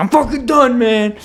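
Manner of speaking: put-on exasperated, fed-up angry outburst, pitched very high. Retelling giving up on cleaning box art: retelling an angry outburst. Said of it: "And I'm pissed".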